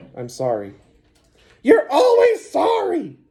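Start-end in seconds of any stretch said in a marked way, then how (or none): 1.6-3.1 very high, squeaky sock-puppet voice, swooping. Reading a story aloud, the sock puppet Steve answers Mister Cheeseman; Steve's squeaky voice. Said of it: "squeaked Steve".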